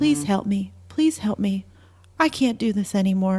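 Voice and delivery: normal talking voice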